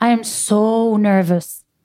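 stretched-out voice. A speaker explaining how to exaggerate a sign demonstrates a stretched-out voice. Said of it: "in your voice you are extending like".

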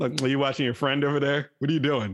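mock-sarcastic, put-on tone. Speaker acts out someone walking in on him watching, imitating Adrian's sarcasm. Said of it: "Adrian will walk in all sarcastic".

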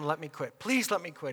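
put-on begging. Speaker retells begging God to let them quit, retelling begging. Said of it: "I begged him".

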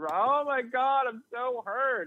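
very high, wailing fake sob, very slow and drawn out. Mocking a soccer player who crumbles to the ground untouched: mock crying, feigned hurt. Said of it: "he's crumbled to the ground and he's crying".

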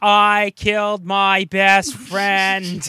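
mock very loud, slow, drawn-out blubbering crying wail. Describing the character who keeps crying: imitating JFK character crying. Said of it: "how he can't stop crying".

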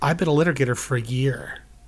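plain

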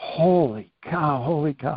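slow, stunned, awestruck amazement, losing composure. Retelling his reaction to a first sergeant's fight story, retelling own amazement. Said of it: "So I'm losing it".

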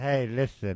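put-on drunk-sounding speech. Joining in on the drunk parade speech: drunk Matt Stafford impression. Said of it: "that was us doing impressions".

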